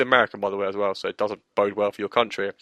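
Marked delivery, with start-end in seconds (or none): none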